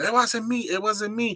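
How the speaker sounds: acted, insistent, high yelling, over and over. Retelling what the lady kept saying: imitating someone yelling. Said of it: "she just kept yelling".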